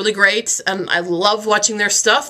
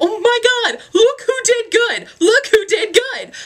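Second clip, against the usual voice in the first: mock very high, swooping, thrilled, happy, excited cheering; 14 semitones higher than usual. Retelling running up to a JTE after reading tests: imitating happy excited screaming. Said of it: "screaming and happy as if we just won the lottery".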